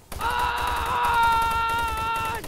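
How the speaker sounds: startled, loud, high-pitched scream.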